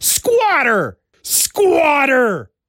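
high, exclaimed delivery. Reading a comic issue's title aloud, showing how it must be said: exclaimed. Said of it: "You have to say it like that because there's an exclamation point".

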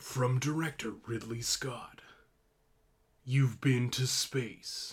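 movie trailer announcer narrator voice. Recalling a film trailer, the speaker puts on a movie trailer voice. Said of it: "where's my trailer voice?".

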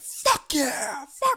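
mock very high, loud, belligerent hollering. Retelling what a man said in a crowded bar, retelling a loud belligerent shout. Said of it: "Like loud, like belligerent".

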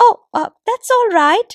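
put-on bright, chirping, very high old woman's voice. Narrating a story, the old woman answers the woman at the window: chirpy old woman's voice. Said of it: "said the old woman with a chirp in her voice".

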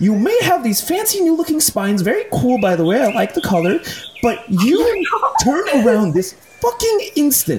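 very high, animated, swooping scolding character voice. In a tabletop game, the narrator voices a female water genasi; water genasi character voice. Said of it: "And you guys see several interesting emotions kind of flash through this female water genasi's eyes".

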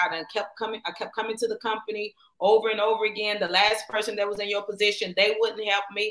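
plain

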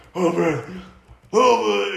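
rough, gruff, high rasp. Discussing an unflattering angle of Bruce, mimicking the way he says it; Bruce impression. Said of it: "it's the way he says".

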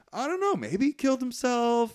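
high, rattled-off nervous stammering voice. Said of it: "And he's like".

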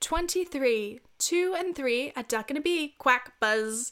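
attempted English accent, bingo-caller style calling. Imitating a bingo caller's number jokes, trying an english accent. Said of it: "let me try my best English accent".

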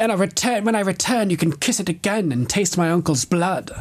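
high, smug, taunting mock sneer.

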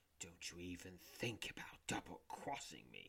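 hushed whisper, close in the ear. Narrator voices a character warning you close in your ear, whispering. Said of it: "he whispers in your ear".

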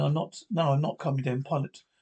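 ordinary delivery, nothing marked

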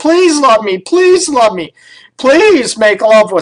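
sarcastic sing-song begging. Acting out a partner begging to be loved: sarcastic imitation of begging partner. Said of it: "I'm being sarcastic".

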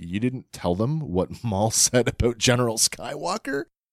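mildly baffled, bewildered tone. Recounting a scene, quoting one character's remark to another: retelling a bewildered question. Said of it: "there's a bit of bewilderment there".

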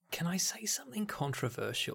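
soft, unvoiced, conspiratorial whisper.

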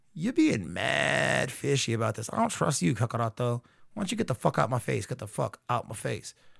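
rough, annoyed, thoroughly fed-up, dismissive rant. Retelling a scene where Vegeta answers Kakaroto: acting out an annoyed Vegeta. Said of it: "Vegeta's like real annoyed".

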